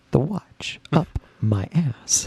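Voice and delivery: spooky stage whisper. Retelling a nightmare where a movie character keeps visiting at night: whispering as Christopher Walken. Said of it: "And he just whispers".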